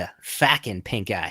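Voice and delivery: imitated Rhode Island accent. Showing how a drunk stranger said it: imitating a Rhode Island accent. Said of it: "the Rhode Island accent".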